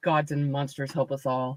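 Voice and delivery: low, hushed grumble muttered under the breath. In a fantasy roleplay, Marwyn looks around, muttering under her breath. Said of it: "muttering under her breath".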